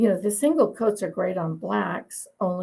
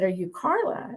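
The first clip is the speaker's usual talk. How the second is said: put-on strong English accent, man's voice. Retelling a man first approaching the speaker, in a strong English accent. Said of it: "with this really strong English accent".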